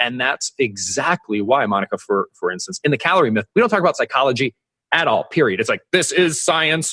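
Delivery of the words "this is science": robotic, mechanical, machine-like delivery. Describing how a book on the calorie myth talks about science, in a robot voice. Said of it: "robot voice".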